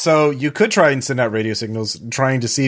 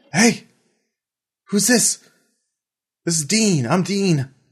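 youthful-sounding voice with raised pitch; 7 semitones higher than usual. Voicing Dean answering the players on the radio: young voice of Dean. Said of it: "you do get a young voice on the phone".

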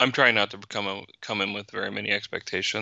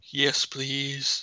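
words stretched mid-yawn, pitched up; 5 semitones higher, 3 dB quieter than usual. Late-night chat about a comic tie-in, answering a question while yawning. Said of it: "Sorry, I was yawning".

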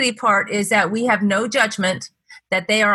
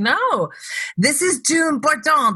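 put-on French accent, pitched higher; 6 semitones higher than usual. Retelling how Frenchie interrupted a phone call, imitating Frenchie's French accent. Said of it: "with his French accent".

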